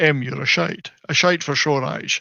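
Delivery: Scottish film-star accent. Offering the other speaker an impression, doing a good Sean Connery impression. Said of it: "I can do a good Sean Connery impression".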